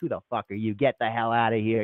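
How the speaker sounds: put-on hostile tone. Retelling how locals react to an American accent, mock-hostile locals. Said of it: "they don't like it".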